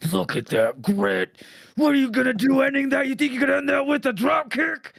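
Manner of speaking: very high, loud ringside commentator yelling. Retelling wrestling commentary, imitating Moxley yelling. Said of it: "He was just yelling the whole fucking time".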